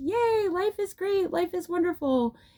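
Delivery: play-acted, very high, giddy, ecstatic happy voice. Retelling a scene from the Disney Rapunzel movie: imitating a really happy Rapunzel. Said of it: "she's really happy".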